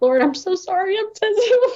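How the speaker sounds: tearful, weepy, very high crying voice. Retelling apologizing to the Lord at the car: retelling own crying. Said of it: "I'm actually crying and I'm like".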